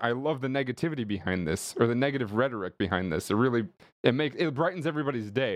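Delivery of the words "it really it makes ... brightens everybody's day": normal talking voice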